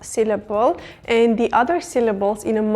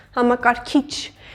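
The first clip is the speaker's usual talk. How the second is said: gentle, light stress on final syllable kich. Explaining a four-syllable word meaning computer: light stress on kich. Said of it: "the last syllable, this kich part, is emphasized".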